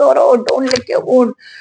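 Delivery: cross, frantic, angry scolding yell. Retelling yelling at the pet not to lick its wound: retelling own angry yelling. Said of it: "I am screaming and yelling at him".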